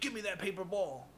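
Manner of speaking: play-acted scolding teacher voice, high-pitched. Retelling how a man called the speaker out in front of everybody, retelling his yell. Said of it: "So he kind of yells at me".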